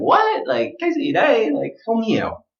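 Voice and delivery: mock bafflement, very high, swooping, lost-sounding. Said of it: "you're gonna be like".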